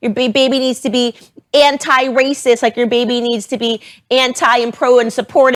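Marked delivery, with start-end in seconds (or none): none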